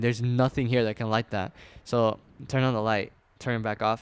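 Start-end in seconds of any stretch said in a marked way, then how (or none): none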